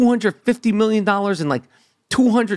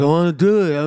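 mock muffled cloth-in-mouth speech, lower pitch; 4 semitones lower than usual. Retelling a friend on pain medication trying to talk: imitating muffled cloth-in-mouth voice. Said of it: "all kinds of cloth and tissue in his mouth".

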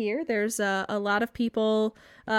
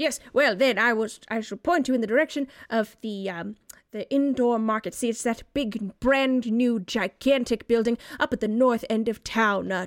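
put-on stuffy older man voice. A character points listeners to the new indoor market, stuffy older man voice. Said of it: "a stuffy older man".

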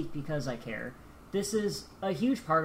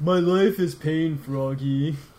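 loud cartoon cat character voice; 7 dB louder than usual. Joking with friends about Big the Cat, the speaker does a Big the Cat voice. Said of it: "That's a pretty good Big".

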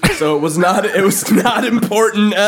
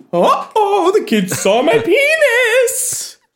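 put-on old-lady voice, very high, slow, sing-song, swooping; 14 semitones higher than usual. Retelling a story about a man whose son walks in, Mrs. Doubtfire voice. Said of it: "You are Mrs. Doubtfire when you do that voice".

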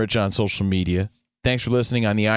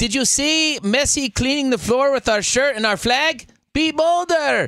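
tough boxer voice, pitched very high. Quoting a boxer's warning to Messi in a Canelo Alvarez impression. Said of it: "that's my Canelo impression".

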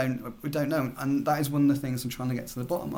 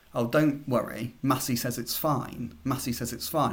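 usual speaking voice

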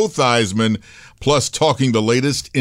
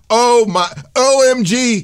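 thrilled, excited, higher pitch; 11 semitones higher, 3 dB louder than usual. Talking college football with another speaker: excited. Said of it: "If I sound excited".

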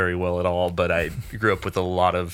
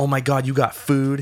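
mock drunk speech, pitched higher; 7 semitones higher, 3 dB louder than usual. Retelling what a very drunk friend said on seeing food: imitating a drunk friend. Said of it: "she's fucking trashed".

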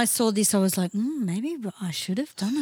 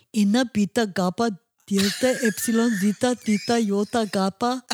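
fake Greek accent held throughout. Recalling wanting everyone to think they were greek: put-on greek accent. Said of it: "you used to talk like this too".

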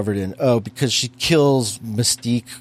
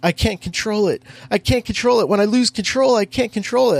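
acted out screaming, shrill, pitched very high; 9 semitones higher than usual. Mocking a movie character's sudden outburst: imitating screaming. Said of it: "just start screaming".

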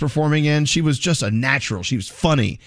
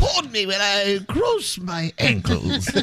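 high, slow, drawn-out, swooping affected posh British butler voice; 7 semitones higher than usual. Someone asks for it, so the speaker does Queen Elizabeth voice. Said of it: "your Queen Elizabeth voice ... Which sounds nothing like Queen Elizabeth. I sound like her butler".

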